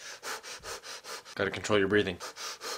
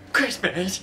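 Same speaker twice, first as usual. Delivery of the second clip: squealing, very high, loud, overexcited burst; 11 semitones higher, 6 dB louder than usual. Failing to stay calm about the holiday: overexcited outburst. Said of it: "Did it again".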